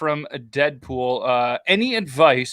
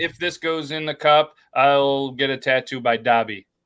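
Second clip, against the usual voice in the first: plain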